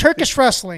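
shouting. Answering the question of what they want, yelling. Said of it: "Why are you yelling?".

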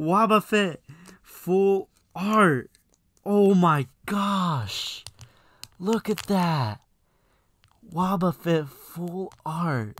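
thrilled, very loud, high shout. Pulling a card needed for the binder on video, very excited. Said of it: "I can't tell you how excited I am".

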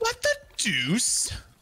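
very high-pitched cartoon baby voice. Recalling watching Family Guy, mimic how people would react: Stewie voice. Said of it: "doing the Stewie voice".

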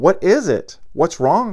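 startled, worried, high alarmed cry. Narrator reading Matt's words after Celia bursts into tears, alarmed cry. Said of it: "cried Matt, thoroughly alarmed".

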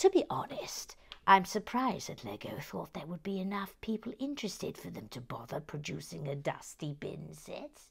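put-on grumpy voice. Speaker talking about a Lego set, switching into the Grumpy [name] voice. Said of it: "the Grumpy [name] voice".

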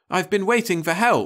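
very high-pitched, defensive protesting tone. A man answers his client, who has just ordered him to treat the bear: defensive. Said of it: "Oliver said defensively".

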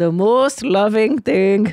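put-on Indian accent. Quoting a spiritual leader he always thinks of, in a put-on indian accent. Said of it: "I'll do his accent".

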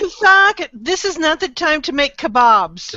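high-pitched shouting yell. A player tells the group what their character yells at Kathak, yelling. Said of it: "And I yell".

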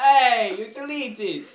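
Italian-sounding voice. Reacting to something being deleted in the game: Italian accent. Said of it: "Why did I just sound Italian then?".

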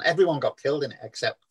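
ordinary talk, nothing marked

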